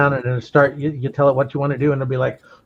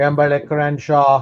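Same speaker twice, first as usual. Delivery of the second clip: put-on German accent. Pretending to be a german sewing machine at night: german accent. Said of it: "so it would have the correct accent".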